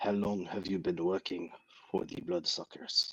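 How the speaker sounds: very bad put-on French accent, soft and quick. Telling a story about a man pointing a gun, in a very bad French accent. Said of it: "he says in a very bad French accent".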